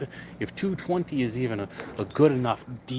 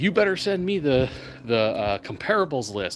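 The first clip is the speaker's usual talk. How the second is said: ordinary talk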